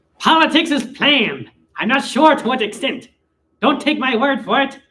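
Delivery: loud, high cartoon character voice. Reading out a message from Egg Smell after a voice request, in a Waluigi voice. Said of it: "I'll do it as Waluigi".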